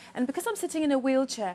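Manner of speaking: high-pitched, bubbly, chattering voice. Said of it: "and she was bubbly".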